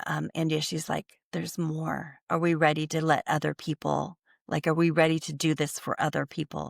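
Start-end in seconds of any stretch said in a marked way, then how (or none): none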